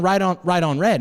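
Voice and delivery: stubborn, insistent shouting, one phrase repeated. Retelling what an angry driver shouted at a light: imitating a man yelling. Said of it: "He just keeps on yelling".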